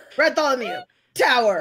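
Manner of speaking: shouting. Doing street tricks with a rat, shouting a command. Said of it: "You're, like, yelling out".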